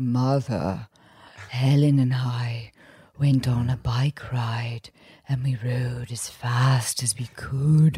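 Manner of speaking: very slow, low, hypnotic, every word drawn out. Imitating a storyteller from The Moth: hypnotic Edgar Oliver voice. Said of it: "he says things like".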